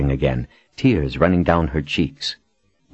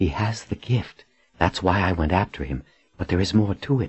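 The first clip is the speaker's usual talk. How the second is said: plain reading voice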